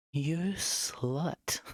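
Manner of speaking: dominant mother voice. Redoing a line properly in the paid-for Dommy Mommy voice. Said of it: "I'm gonna redo that again and do it properly".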